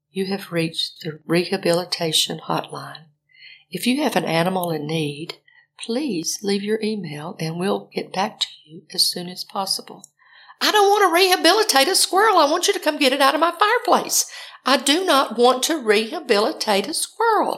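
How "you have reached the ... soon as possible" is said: gentle, sweet, soft-spoken, low voice. Retelling calling a number and the voice that answered, in a sweet, soft voice. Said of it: "this very sweet, soft voice said".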